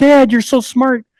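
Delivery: put-on very high-pitched childish screaming yell. Retelling how the kids in the chamber kept calling out: imitating kids screaming. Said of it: "they were just screaming at me all the time".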